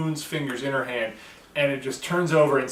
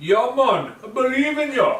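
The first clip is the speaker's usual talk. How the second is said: put-on Australian accent, very high-pitched; 9 semitones higher, 5 dB louder than usual. Telling the other speaker they believe in him: put-on australian accent. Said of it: "You and your racist Australian accent".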